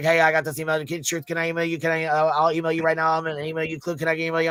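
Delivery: very fast, frantic talking. Retelling how Julia came up talking: imitating someone talking very fast. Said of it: "going a hundred miles a minute, and she was talking like this".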